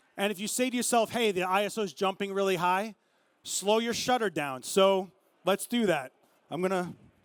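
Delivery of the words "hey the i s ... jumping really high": ordinary talk, nothing marked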